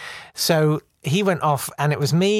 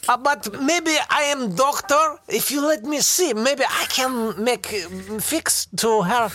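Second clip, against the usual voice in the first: very high, slow, amusing put-on Eastern Bloc accent; 10 semitones higher than usual. Retelling a drunk brother asking a policeman, imitating a put-on Eastern Bloc accent. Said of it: "amusing Eastern Bloc kind of accent".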